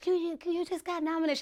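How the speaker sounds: put-on tiny, high, babyish little baby voice. Retelling the moment she learned of her nomination, imitating a little baby voice. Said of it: "She has a little baby voice".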